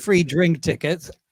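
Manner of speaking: usual speaking voice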